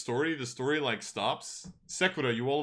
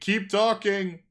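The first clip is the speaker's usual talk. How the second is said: high-pitched loud shouting; 7 semitones higher, 7 dB louder than usual. Relaying a character's call to a player: shouting. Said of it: "you hear someone shouting".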